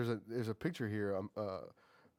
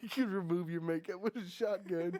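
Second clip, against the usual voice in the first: very high-pitched mock laughing breaking in mid-line; 9 semitones higher than usual. Retelling a joke to another speaker, laughing while talking. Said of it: "It's fucking cracking myself up".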